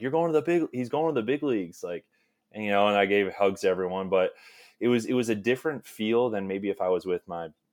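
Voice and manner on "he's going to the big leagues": mock yelling, much higher and louder. Recounting how one of the guys reacted to him, retelling a guy's yell. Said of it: "started yelling like".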